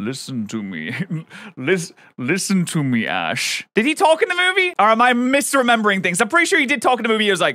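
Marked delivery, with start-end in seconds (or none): 0.0-3.7 very slow, deep, sweeping voice, each word dragged. Recalling how Lugia spoke to Ash in the movie, deep Lugia voice. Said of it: "he had like a deep voice".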